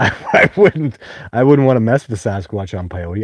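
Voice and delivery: words broken up by laughter. Mid-conversation, the speaker keeps talking, laughing while talking. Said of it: "I'm sorry, I'm laughing".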